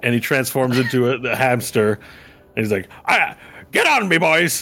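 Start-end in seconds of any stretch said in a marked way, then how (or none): 3.1-4.6 put-on Irish accent, pitched high and slow. Voicing a hamster telling the others to climb on: Irish accent. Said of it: "The Irish now for some reason".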